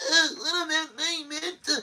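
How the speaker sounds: high-pitched, forced fake crying. Mocking someone in an interview squeezing out tears: imitating someone forcing out tears. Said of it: "trying to squeeze out the tears like".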